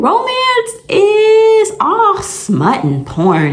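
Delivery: high, slow, drawn-out mocking drawl.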